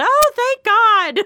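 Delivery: very loud, shrill, high-pitched yell. Retelling the stepmom's reaction overheard on a phone call: imitating stepmom yelling. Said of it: "you could hear my stepmom just yell".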